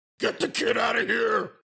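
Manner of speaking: raspy superhero growl. Retelling a wrestler's shout walking to the ring: imitating Batman voice. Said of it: "this Batman voice".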